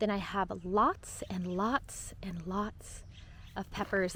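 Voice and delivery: soft, slow whisper.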